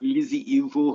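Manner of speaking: very bad put-on Scouse accent. Repeating a wrestler's name in a terrible put-on Scouse accent. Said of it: "That was the worst Scouse accent I've ever heard".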